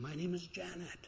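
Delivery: very hushed, choked up, holding back tears. A middle-aged woman tells an older woman her name, choking back tears. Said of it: "chokes back tears and says".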